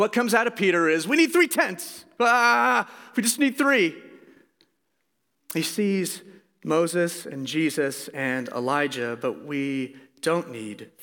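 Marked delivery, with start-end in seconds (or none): 1.1-3.9 mock terrified, high, sudden blurted cry. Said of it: "terrified, almost reflexively, just screams out".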